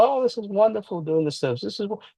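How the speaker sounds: high-pitched, dripping, mocking sarcasm. Imitating what Paige was talking about earlier: imitating Paige being sarcastic. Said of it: "I know she's being sarcastic".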